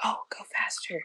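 soft whispered delivery. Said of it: "whispering in my ear".

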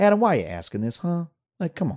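put-on condescending Southern accent with swooping pitch. Recalling a woman in Florida brushing off his question, mock-condescending Southern mom accent. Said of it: "Something about a Southern accent from a Southern, you know, mom sort of accent".

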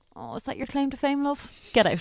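high, swooping, dismissive sing-song voice. Retelling being turned away at sixteen: imitating the owner of the place. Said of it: "And he goes".

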